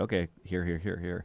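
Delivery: ordinary delivery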